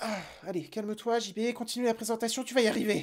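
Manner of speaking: soft, hushed, soothing murmur.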